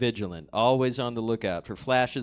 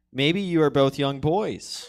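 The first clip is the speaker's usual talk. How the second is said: ordinary talk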